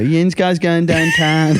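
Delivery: local Pittsburgh way of talking. Imitating how people in Pittsburgh talk, in a Pittsburgh accent. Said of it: "they have a really weird accent where they go".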